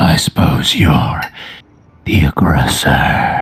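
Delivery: very low, rasping, gravelly character voice. Narrating to players, voicing a man who sees the bloody axe: deep gravelly voice. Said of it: "deep, gravelly voice".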